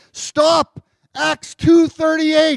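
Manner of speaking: high, slow yelling, as loud as possible.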